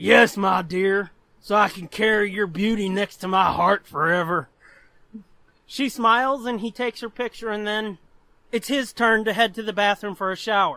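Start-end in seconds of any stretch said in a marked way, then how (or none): 0.0-4.5 creepy put-on voice, lower. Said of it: "given the voice I'm about to use, that makes it even creepier".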